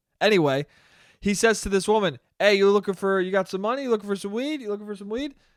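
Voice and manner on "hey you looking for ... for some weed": very polite, courteous, soft-sell tone. Retelling a guy offering weed to a woman: imitating a polite offer. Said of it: "Very politely".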